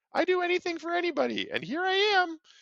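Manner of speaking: piping, very high put-on voice. Speaker imitating the kind of person not to be: high-pitched put-on voice. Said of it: "There's my high pitched voice again".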